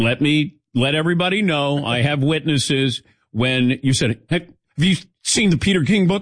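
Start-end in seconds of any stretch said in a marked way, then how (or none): 4.3-6.2 fast, higher panicked voice. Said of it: "I did not say it in a panicked voice".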